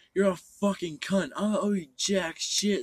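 play-acted high, loud, abusive yell. Retelling what Chris yelled on the way back: imitating Chris yelling. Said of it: "Chris was fucking yelling at me".

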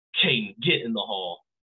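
mock-angry, put-on angry tone. Retelling a story to a listener, quoting what she said, imitating her angry order. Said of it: "She got so mad and said".

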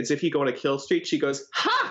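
ordinary talk

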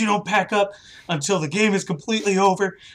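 high, loud, angry screaming. Retelling a player's reaction to an early cleanup: imitating a player screaming. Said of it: "screamed at me".

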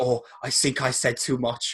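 put-on German accent. Retelling an interview story, quoting a german woman caller; imitating a german woman's accent. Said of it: "I love the accent".

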